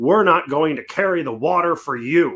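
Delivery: mock spunky, feisty tone with some spark. Retelling a member of Congress's reply, imitating a spunky retort. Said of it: "some spunk in his voice".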